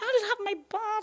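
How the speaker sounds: put-on high, laughing, fussy toddler whine.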